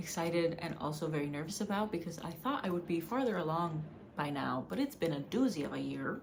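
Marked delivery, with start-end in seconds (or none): 4.7-6.2 put-on, attempted Wisconsin accent. Trying out an accent and then apologizing to people from Wisconsin, put-on Wisconsin accent. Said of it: "I tried to do that in a Wisconsin accent".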